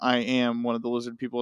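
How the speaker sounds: ordinary delivery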